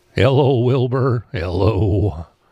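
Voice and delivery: put-on horse voice. Showing how anyone can do a Mr. Ed impersonation, Mr. Ed impression. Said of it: "gravel your voice a little bit, and then you just stammer it".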